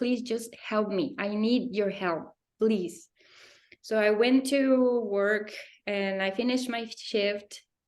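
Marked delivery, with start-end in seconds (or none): 0.0-3.1 put-on tearful crying voice. Retelling a desperate prayer in the shower: retelling crying while pleading. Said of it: "I was just crying".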